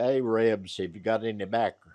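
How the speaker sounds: ordinary talk, nothing marked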